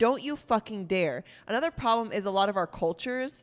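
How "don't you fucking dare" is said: mock-angry, acted furious tone. Speaker retells an argument with their mom, retelling an angry warning. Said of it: "speaker warns mother, performed angry retort".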